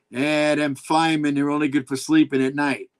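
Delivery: ordinary talk, nothing marked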